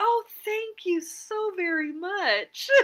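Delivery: put-on very high voice, laid-on charm. Recalling thanking the person who got you out, putting on charm. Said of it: "I had to be charming. I was like".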